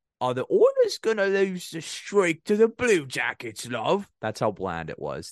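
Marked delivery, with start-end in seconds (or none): 0.2-4.1 fake sing-song British accent, very high. Showing how bland this period was, with a put-on British accent. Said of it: "I had to give you a British accent".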